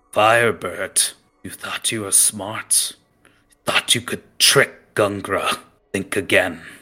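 threatening, growled voice. Narrating the story as Gungra confronts Firebird, great sword in hand: growling. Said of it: "And he growls at him".

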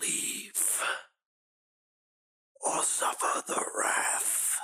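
slow, menacing whisper in a creature voice. Voicing a creature blocking the hallway: creature voice threatening the party. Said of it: "flows its way to the, uh, to a, to a choke point in the hallway and goes".

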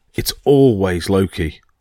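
ordinary delivery, nothing marked

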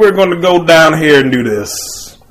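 clumsy, fake, loud, slow Southern drawl. Imitating a movie actor's poorly done accent: imitating a bad Southern accent. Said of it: "He talks like a Southerner. And he doesn't do it well".

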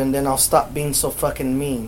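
ordinary delivery

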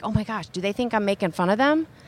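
usual speaking voice

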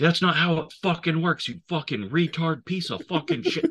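put-on very high, raging screamed delivery. Retelling Carter stomping on a guy's inhaler, imitating Carter screaming. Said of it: "And just screaming at the guy".

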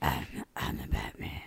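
very low, whispery, growling voice.

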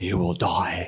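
deep, very low movie-hero delivery. Imagining a warning to the group: Liam Neeson voice from Taken. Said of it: "I hear this in kind of Liam Neeson voice".

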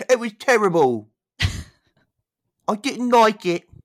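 put-on little British schoolboy voice, very high. Recapping an episode with a co-host, commenting in a little British schoolboy voice. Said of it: "My little British schoolboy".

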